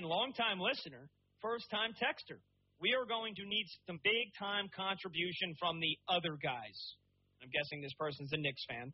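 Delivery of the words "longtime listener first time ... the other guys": normal talking voice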